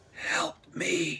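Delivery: rasping, raspy, high woman's voice. A game narrator voices a woman reaching out her arms to passersby: raspy voice. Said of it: "you hear a raspy voice say".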